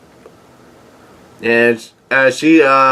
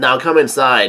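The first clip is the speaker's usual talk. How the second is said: usual speaking voice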